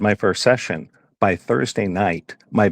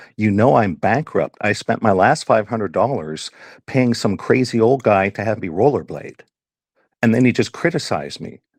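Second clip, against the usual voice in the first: ordinary talk, nothing marked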